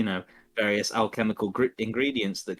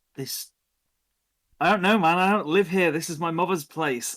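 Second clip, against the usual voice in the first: horrified panic, raised and high-pitched; 9 semitones higher, 5 dB louder than usual. Voicing a woman reacting to the player's failed roll, horrified. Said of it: "She looks at you horrified and goes".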